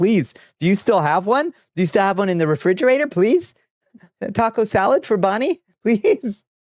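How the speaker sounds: very high-pitched, begging, pleading tone. Retelling going to every Wendy's in town: imitating own past begging. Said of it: "begging and pleading".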